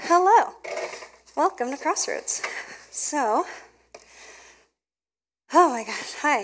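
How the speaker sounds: out of breath. Greeting everybody at the start, out of breath. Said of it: "I need to catch my breath".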